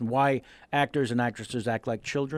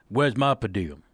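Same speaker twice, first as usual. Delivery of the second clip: put-on low deep voice, louder; 3 semitones lower, 4 dB louder than usual. Retelling a story from a night shoot: Michael Clarke Duncan low voice. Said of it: "the lower tone voice of Michael Clark Duncan".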